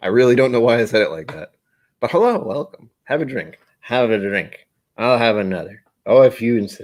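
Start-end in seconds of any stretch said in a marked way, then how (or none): 2.0-6.8 voice of an aged celebrity. Greeting Doug and offering drinks, doing an old celebrity impression. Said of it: "That's an old celebrity person to try and imitate".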